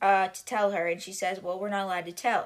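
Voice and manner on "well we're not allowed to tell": ordinary talk, nothing marked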